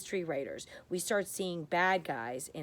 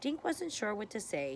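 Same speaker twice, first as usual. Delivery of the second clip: usual speaking voice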